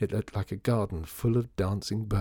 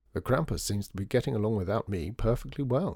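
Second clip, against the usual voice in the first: ordinary delivery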